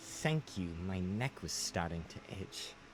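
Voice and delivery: low, soft, deep, haughty creature voice. A cursed phoenix thanks someone who just burned its collar, deep proud phoenix voice. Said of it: "I am a proud phoenix. / It is a woman. / your voice sounds very deep".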